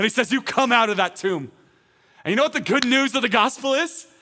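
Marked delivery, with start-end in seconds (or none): 0.3-1.5 authoritative, fully commanding voice. Acting out Jesus calling Lazarus from the tomb: commanding voice of authority. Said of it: "speaks with the commanding voice".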